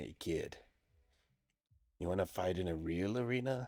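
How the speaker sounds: soft, close, leaning-in half-whisper. Voicing an announcer leaning in to invite the player: half-whispering. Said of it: "whispers to you".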